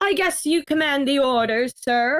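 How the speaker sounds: poor, bad put-on posh sophisticated voice. Addressing a higher-ranked person as sir, in a poor attempt at a sophisticated voice. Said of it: "a poor man's attempt at a sophisticated voice".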